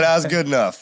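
plain

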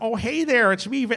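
put-on Midwestern accent. Speaker demonstrates the accent an actor uses in the movie: D'Onofrio's Midwestern accent. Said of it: "I guess it's like a Midwestern".

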